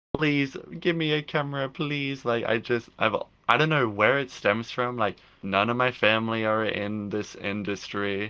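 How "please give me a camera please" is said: put-on high, pleading child's begging voice. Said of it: "begging my parents".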